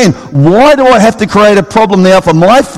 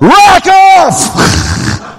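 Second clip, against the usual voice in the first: big, booming, roaring voice; 9 semitones higher than usual. In an imagined scene, someone behind a door answers a knock in a big booming voice. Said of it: "a big booming voice comes from the other side of the door".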